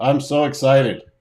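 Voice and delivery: mock-deadpan, flat put-on delivery. Echoing the other speaker's words back, in a mock-deadpan delivery. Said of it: "that sounded like me with deadpan voice".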